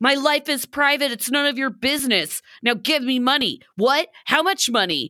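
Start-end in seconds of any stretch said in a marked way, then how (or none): 0.0-3.6 half-shouted, mild, indignant and insistent yell. Praising a cast member, the speaker mocks him, mock-screaming as Manuel. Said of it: "He's like screaming".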